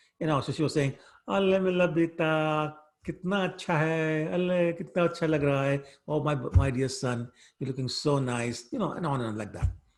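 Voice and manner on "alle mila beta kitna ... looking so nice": put-on baby talk, higher. Retelling how Mother Yashoda spoke to her son: imitating baby talk. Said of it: "She also started talking like a baby".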